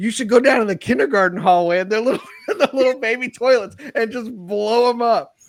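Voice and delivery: laughing speech.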